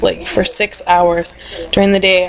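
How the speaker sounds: ordinary talk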